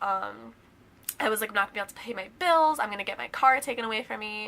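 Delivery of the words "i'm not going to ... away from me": rushed, panicked, spiraling rambling, mock frantic. Retelling a phone call with a strict manager: retelling own panicked freak-out. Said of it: "I was literally freaking out".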